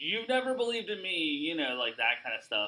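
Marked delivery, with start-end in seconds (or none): 0.0-1.2 instant, high, defensive pushback. Recapping a segment, speaker retells how one performer answered another: mock-defensive. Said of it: "immediately defensively say stuff like".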